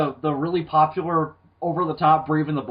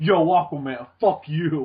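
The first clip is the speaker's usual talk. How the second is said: mock bad-guy taunting voice.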